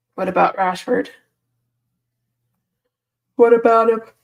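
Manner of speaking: mid-yawn, sleepy speech. Early in the morning, a speaker asks the group a question, yawning while talking. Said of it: "I keep yawning".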